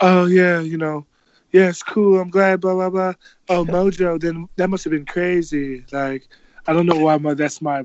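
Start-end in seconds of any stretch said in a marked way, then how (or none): 0.0-5.9 failed attempt at a put-on British accent. Retelling a woman's reply about having met before, in a bad british accent impression. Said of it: "that wasn't British".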